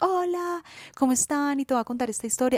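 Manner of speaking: affected, surface-level, swooping influencer tone. Recalling the Instagram persona a friend pointed out, imitating her affected Instagram tone. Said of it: "en este tono, que hablo ya no desde el corazón".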